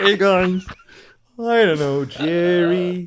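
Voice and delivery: bad comic drawl, drawn out. Doing a really bad Ray Romano impression for the others: bad Ray Romano impression. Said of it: "my really bad Ray Romano impression".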